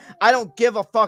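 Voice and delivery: ordinary talk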